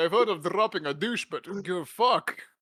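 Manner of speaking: put-on Scottish accent, spy voice. Retelling a spy film scene, imitating Sean Connery. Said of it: "I can't even do the fucking impression".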